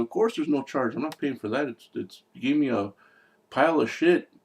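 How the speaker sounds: put-on indignant, griping, bitching complaint. Retelling a movie scene of a customer complaining about pizza: imitating someone bitching. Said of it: "just completely bitching".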